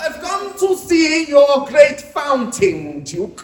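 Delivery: slow, bad put-on Russian accent. Telling of the Tsar visiting the Duke's fountain, rubbish put-on Russian accent. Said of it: "sorry if my Russian accent's rubbish".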